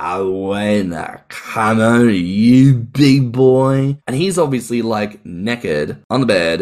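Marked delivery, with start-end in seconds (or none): 0.0-4.0 put-on, very slow, drawn-out, slurred drunk talk. Telling a story from under the bed, imitating a drunk woman slurring her words. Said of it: "she's like slurring her words like".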